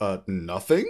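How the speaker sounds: put-on stunned, disbelieving, shocked tone. Retelling a film scene where the basket is empty: imitating a shocked reply. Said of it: "it's like that shocked".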